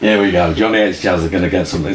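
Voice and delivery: plain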